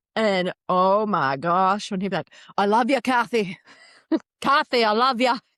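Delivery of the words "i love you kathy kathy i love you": put-on full Scottish accent, loud and pitched up. Retelling how he spoke to Kathy, do Jacob Elordi in a Scottish accent. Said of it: "Scottish accent".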